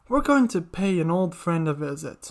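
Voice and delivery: plain reading voice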